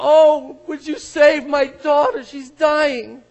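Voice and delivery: very loud, high, desperate pleading outcry. Retelling how a synagogue leader falls at Jesus's feet, acting out a cry. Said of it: "cries out".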